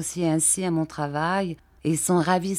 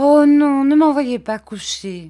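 loud, high-pitched, begging, pleading cry; 8 semitones higher, 10 dB louder than usual. Begging not to be sent off to bed, pleading tone. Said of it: "dit Dora d'un ton suppliant".

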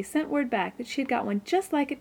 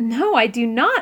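disgusted, louder; 5 dB louder than usual. Narrating a character's answer to a severely asked question: disgusted protest. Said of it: "protested disgusted Anne".

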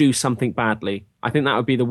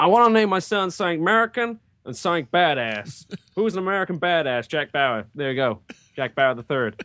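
put-on American accent, pitched high; 5 semitones higher than usual. Describing how people choose a name for their son, in a put-on American accent. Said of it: "Your American accent is the best or the worst".

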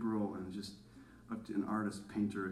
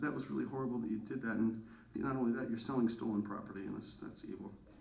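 ordinary delivery

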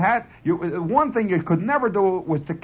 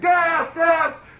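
mock yell, pitched much higher; 10 semitones higher, 3 dB louder than usual. Recalling a march with rifles and gas masks, imitating a man yelling gas. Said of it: "He's yelling".

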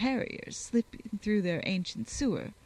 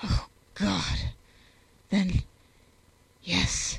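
anguished, tormented, very slow and drawn-out; 4 dB louder than usual. A tormented man finally answers the woman pressing him: muttered in anguish.

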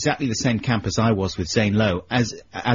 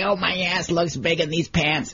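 pitched-up whine; 6 semitones higher than usual. Act out Dana Carvey doing his really cruel impression: a whining Garry Shandling impression. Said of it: "he's whining like this".

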